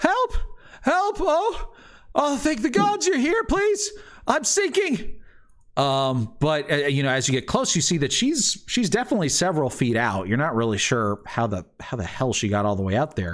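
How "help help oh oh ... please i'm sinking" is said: very high, pleading, feminine cry. Narrator voicing a woman sinking in tar who calls out: feminine voice crying for help. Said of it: "feminine voice, uh, sort of crying for help".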